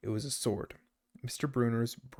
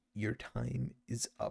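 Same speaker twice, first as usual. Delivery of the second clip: slow, menacing, hissed words; 4 dB quieter than usual. A narrator reads a demanding woman confronting the student narrator: hissed. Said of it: "she hissed".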